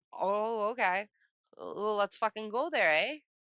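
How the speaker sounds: put-on Montana accent. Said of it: "why am I talking like I'm from Montana?".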